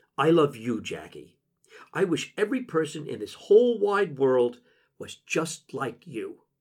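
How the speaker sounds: ordinary delivery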